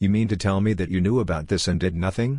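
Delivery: plain reading voice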